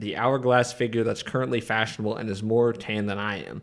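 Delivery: ordinary delivery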